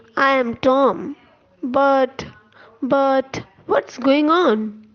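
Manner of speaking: slow, panicky, stammering, drawn-out voice. Narrator reads the ox Tom's reply to Dink, in a slow, panicked voice. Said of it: "He then added in a slow, panicked voice".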